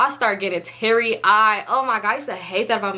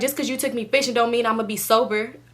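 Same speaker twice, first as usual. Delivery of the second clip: usual speaking voice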